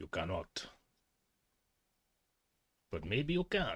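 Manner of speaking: affected voice. Speaker shows how they would talk once they grow a beard; put-on voice. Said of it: "talk like this".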